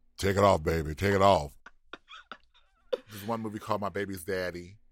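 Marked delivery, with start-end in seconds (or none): 0.2-1.5 put-on deepest, sexiest voice, much louder. Retelling calling out to a stripper from the front at a strip club; put-on deepest, sexiest voice. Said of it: "in my deepest, sexiest voice".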